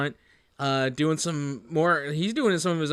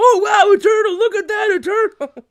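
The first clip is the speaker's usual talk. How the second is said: put-on loud kid voice, higher and louder; 10 dB louder than usual. Imitating kids spotting a turtle: imitating loud kids. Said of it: "they're not quiet about it either".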